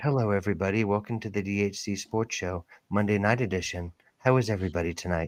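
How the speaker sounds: smooth disc jockey voice. Mock-introducing the sports show to the audience: smooth Jazz FM voice. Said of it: "my Jazz F M voice".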